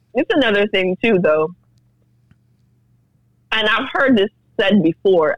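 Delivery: talking with mouth full, speaking while chewing. In a group conversation, a speaker keeps talking while eating, mouth full. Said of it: "I have food in my mouth".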